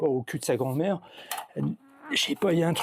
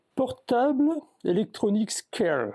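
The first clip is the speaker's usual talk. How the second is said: put-on English accent, pitched higher; 9 semitones higher than usual. Reading the name on a luggage scale aloud, with a put-on English accent. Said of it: "Avec l'accent anglais, heu, breton".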